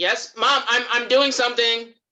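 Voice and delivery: loud calling out.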